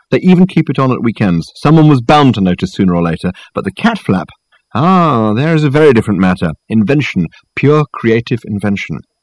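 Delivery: plain reading voice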